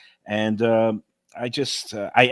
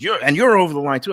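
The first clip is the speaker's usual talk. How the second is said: imitated woman yelling, higher and louder; 5 semitones higher, 5 dB louder than usual. Retelling a confrontation at the tables, quoting the woman: imitating a woman yelling. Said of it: "like she's just like yelling".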